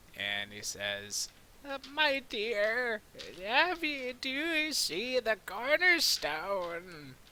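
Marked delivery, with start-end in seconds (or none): 2.0-7.2 put-on very high, raised old lady voice. Retelling how Agner played an old lady asking something: old lady voice. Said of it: "does his best at uh, having an old lady voice".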